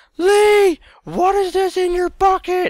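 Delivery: very high-pitched, shrill, slow shrieking yell. Retelling mother yelling upstairs after searching the candy buckets, imitating mom screaming. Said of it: "That was my best mother impression".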